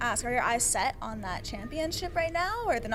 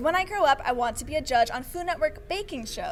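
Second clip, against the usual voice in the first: normal talking voice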